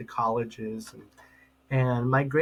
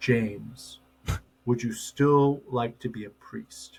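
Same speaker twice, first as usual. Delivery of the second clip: deep, low, slow priestly baritone. The speaker retells a priest tapping his shoulder after years, in Father Morgan's low voice. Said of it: "he has this low voice".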